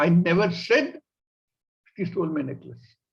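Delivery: heavy stress leaning on the word "said".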